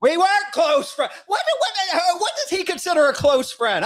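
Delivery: worked-up, fired-up outburst, pitched very high. A speaker vents to the audience about a former friend, getting fired up. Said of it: "I'm getting fired up".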